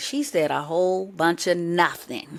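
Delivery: plain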